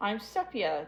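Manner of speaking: light chuckle in a small voice. Reading a story aloud, voicing the little crayon lady: chuckling crayon lady. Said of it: "the little crayon lady chuckled".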